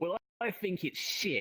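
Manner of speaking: put-on thick British accent. Retelling what a stranger said before walking away, imitating a thick British accent. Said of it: "thick British accent".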